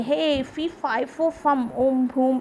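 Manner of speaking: normal talking voice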